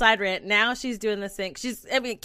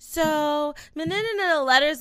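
put-on child's babbling gibberish, higher; 5 semitones higher than usual. Imitating how a little kid starts conversations in half-words: imitating a kid's babbling talk. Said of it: "that's how she talks".

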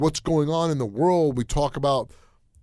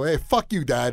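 put-on rude cursing. Retelling how a friend cursed at his dad from the back seat: imitating a friend cursing at his dad. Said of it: "He'd go".

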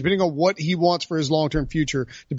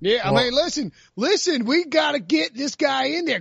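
put-on North Carolina radio caller voice, higher; 8 semitones higher than usual. Imitating a radio caller pushing for a quarterback change: North Carolina radio caller voice. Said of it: "that's my North Carolina radio caller".

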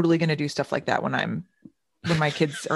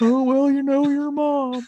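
put-on old-man voice, higher, louder, slower; 10 semitones higher, 4 dB louder than usual. Quoting how Ben talks when he's old; imitating Ben's old-man voice. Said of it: "That's how he talks when he's old".

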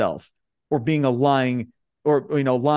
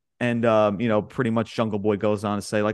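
normal talking voice

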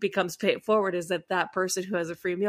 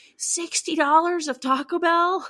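very high, stretched-out, drawn-out screaming screech; 10 semitones higher, 4 dB louder than usual. Retelling a guy screaming at a woman over the bill: imitating someone screaming. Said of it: "starts screaming at this woman".

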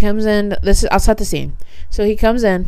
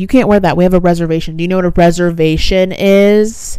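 usual speaking voice

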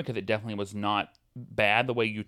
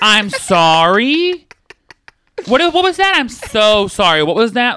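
mock angry, fake furious, higher and louder; 11 semitones higher, 14 dB louder than usual. Acting out being so mad you start apologizing: imitating furious apologizing. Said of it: "so mad that you start apologizing".

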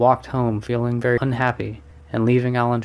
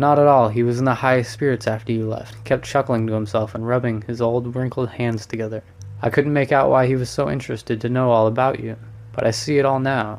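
ordinary delivery, nothing marked

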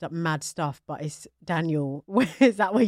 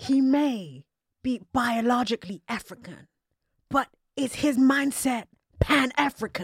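put-on drawn-out delivery in a British accent; 7 semitones higher than usual. Retelling what a commentator said on Twitter, imitating Doctor Umar. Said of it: "He was like".

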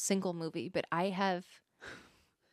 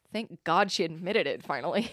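usual speaking voice

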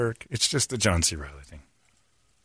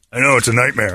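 ordinary delivery

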